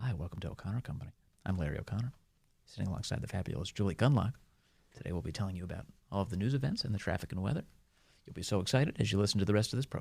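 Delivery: soft, put-on whispered public radio host voice. Imagining Larry O'Connor whispering a whole show: whispering NPR voice as Larry O'Connor. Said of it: "would you do an entire show where you just whisper your way through it".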